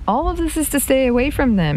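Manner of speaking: high-pitched, bewildered, confused outcry. Arguing with Tilda about going with them, he cries out, confused. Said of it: "he cried, confused".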